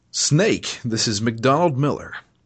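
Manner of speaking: put-on forced, overeager, overdone American accent. Imitating Master Miller's call to Snake: Master Miller's forced American accent. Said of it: "his American accent is so trying to be American".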